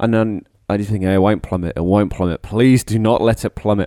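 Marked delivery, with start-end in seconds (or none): none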